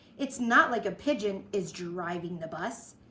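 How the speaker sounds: usual speaking voice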